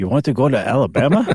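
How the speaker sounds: put-on Cuban accent in a sea captain voice. Imagining a Cuban sea captain asking about sailing to Alabama: imitating a Cuban sea captain. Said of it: "I like your Cuban sea captain".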